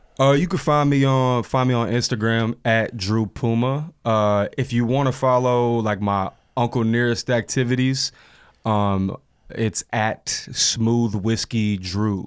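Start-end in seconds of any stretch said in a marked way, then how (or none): 10.3-12.3 very slow, each word stretched out. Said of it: "you have to say it that way".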